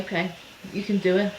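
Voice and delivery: ordinary talk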